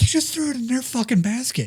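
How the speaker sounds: high-pitched, pissed-off angry yell. Retelling a teammate's reaction after a throw: imitating Rachel yelling angrily. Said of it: "Rachel yelled at me for hitting their".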